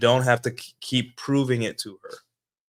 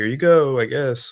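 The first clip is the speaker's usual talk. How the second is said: mock grudging, slow, sarcastic, offhand voice; 4 dB louder than usual. Retelling opening a car door for a date: imitating own sarcastic tone.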